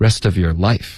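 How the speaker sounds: very fast speech with words run together. Teaching English linking, says rest of your life very fast. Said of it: "可以说得非常快".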